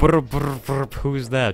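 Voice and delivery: poorly faked whispering ghost voice. Showing a video game sound: terrible King Boo imitation. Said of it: "That's a terrible imitation of".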